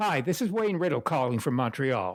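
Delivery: grand, theatrical, flamboyant, showy delivery. Retelling a phone call from a director: flamboyant Wayne Riddle voice. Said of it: "Very flamboyant speaker".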